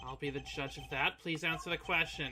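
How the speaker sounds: usual speaking voice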